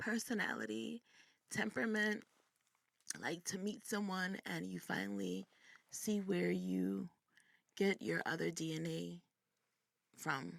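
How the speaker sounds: teary, moved, welling-up voice. Telling viewers about finally meeting a biological dad, tearing up. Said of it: "I'm tearing up".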